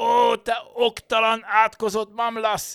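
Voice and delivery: very high, loud, enraged bellowing roar. Seeing his fur coat torn to shreds, a master yells at his servant: roaring. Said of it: "Ordította a szolgára".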